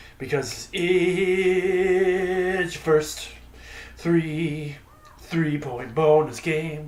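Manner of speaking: slowed-down, very slow, drawn-out announcer-style delivery.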